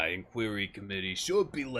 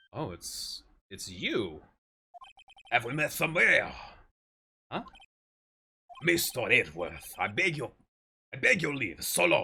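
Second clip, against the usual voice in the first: put-on attempted French accent; 3 dB louder than usual. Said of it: "French, okay, I will do my best".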